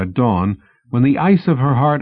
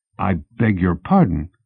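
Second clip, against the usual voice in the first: murmured, much lower pitch; 5 semitones lower than usual. He speaks to a woman standing in the room: murmured. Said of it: "he murmured".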